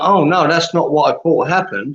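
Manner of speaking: plain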